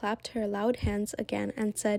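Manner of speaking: plain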